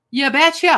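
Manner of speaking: Minnesotan accent on you betcha. Announcing a dice roll number, trying out a Minnesotan accent. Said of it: "That was Minnesotan".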